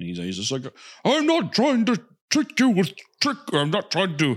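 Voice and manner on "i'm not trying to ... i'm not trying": exasperated shouting, very high-pitched. Acting out the scene where Gandalf yells at him, retelling Gandalf yelling. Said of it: "why he's like yelling at him".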